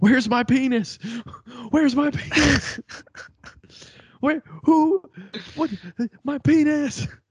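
put-on, very high-pitched screaming. Acting out someone waking up: mock screaming. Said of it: "wake up screaming".

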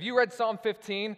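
play-acted, loud, excited shout, pitched way high. Retelling a phone call from a pastor: imitating Sean Obergfell yelling excitedly. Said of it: "he's yelling 'cause he's always super excited".

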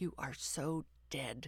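slow, hushed half-whisper under the breath. The narrator speaks to the hound with a stuffed toy in her mouth: half-whispered. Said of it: "I whispered".

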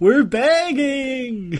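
shrill, high-pitched, desperate pleading shout, begging drawn out. Joking about lights out at 9, the speaker does a Denise impression, shouting. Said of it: "my impression of Denise shouting "we're begging"".

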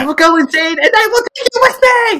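freaking out, losing it, voice very high. Speaker quotes a favorite movie scene, mock Catherine O'Hara freak-out. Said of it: "catherine o'hara freak out".

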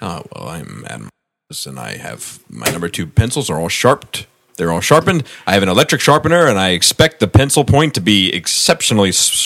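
presidential, speechmaking oratorical voice. Imitating Adam fussing about his sharpened pencils: imitating Adam sounding like Barack Obama. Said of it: "Why do I sound like Barack Obama?".

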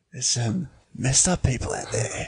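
smooth, seductive, sultry, erotic-sounding delivery. Repeating the other speaker's line to tease: imitating an erotic-sounding line. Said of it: "the way you said it".

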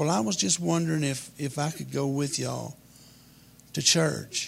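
ordinary delivery

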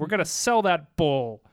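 ordinary talk

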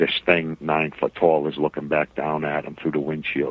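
plain

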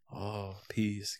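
mock-peaceful meditation voice. Describing how people get into meditation, imitating them: mock-peaceful meditation voice. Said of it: "people get into meditation by being all peaceful".

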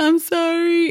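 put-on very high, tearful, crying little girl voice.

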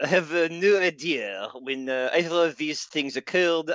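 comic, put-on French accent played for laughs. Giving a quiz answer in Inspector Clouseau voice. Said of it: "That was actually a pretty passable impression".

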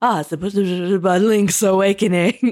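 slow, drawn-out put-on French accent in English. Retelling a French Canadian ad's narrator: imitating a French speaker. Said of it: "great impression of French".

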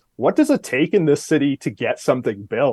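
ordinary delivery

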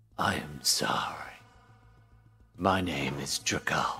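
deep, low voice with strong resonance. Narrator voicing a dragonborn stepping forward to introduce himself: Drakal, deep resonant voice. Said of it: "same deep resonant voice".

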